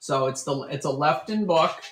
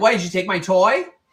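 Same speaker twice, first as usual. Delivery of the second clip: put-on dog voice, much louder; 6 semitones higher, 8 dB louder than usual. Speaking for the dog after his toy was taken, voicing Tobes the dog. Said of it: "He's like".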